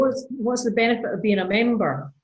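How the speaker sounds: ordinary talk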